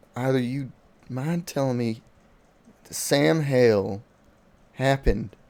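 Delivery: discreet, confidential, private tone. Game master as the sheriff, coming over to the players, in a hushed tone. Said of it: "the sheriff kind of comes over to you guys in a hushed tone".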